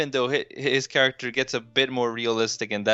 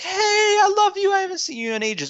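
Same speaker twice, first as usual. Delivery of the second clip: mock yell, very loud and very high-pitched; 4 dB louder than usual. Retelling how somebody at parties walks over: imitating someone yelling. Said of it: "starts yelling".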